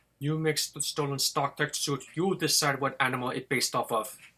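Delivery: fake Russian accent, put on thick and loud. Retelling what someone said to the speaker, in a faux Russian accent. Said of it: "in my like faux Russian accent".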